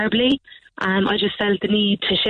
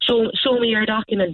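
plain

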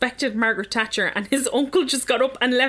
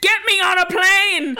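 very slow, stretched-out, loud furious yell; 8 semitones higher, 6 dB louder than usual. Reading out a story about an uncle leaving a funeral: imitating someone shouting.

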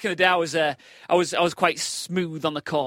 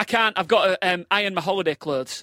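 normal talking voice

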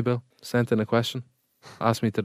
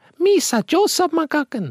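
put-on cartoonish alien voice, higher and louder; 5 dB louder than usual. Joking about sounding like him, putting on a Jar Jar Binks voice. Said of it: "sounds like you're putting on a voice".

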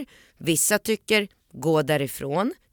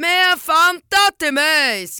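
shrill, very high, loud, drawn-out screeching scream; 12 semitones higher, 7 dB louder than usual. Retelling a woman screaming in the speaker's ear, imitating a woman screaming. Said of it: "skriker hon så här".

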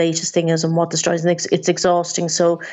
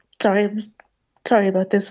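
emotional, choked-up voice, close to tears; 3 semitones higher than usual. Agreeing with the other speaker about being listened to: emotional, close to tears. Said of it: "Sorry, I'm a bit emotional".

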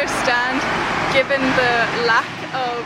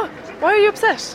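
high, fast, worried mum voice. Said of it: "she would see it and go".

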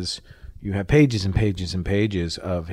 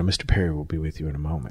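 put-on businesslike voice, much lower; 4 semitones lower than usual. Recalling a meeting, quoting the man's assistant: imitating a businesslike voice. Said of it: "said in this incredibly businesslike voice".

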